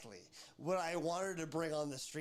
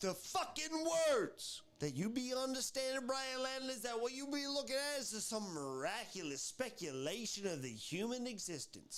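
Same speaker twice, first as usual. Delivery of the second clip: weird put-on Louisiana Southern accent, pitched up; 6 semitones higher than usual. Addressing brian landon after slipping into a voice: weird louisiana accent. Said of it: "turned in some weird Louisiana slave owner accent".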